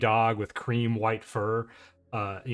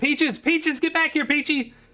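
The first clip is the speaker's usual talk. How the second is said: very high-pitched, loud hollered call; 5 dB louder than usual. Retelling a woman chasing her dog around the corner, imitating a woman hollering. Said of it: "this woman's voice uh, hollering after it".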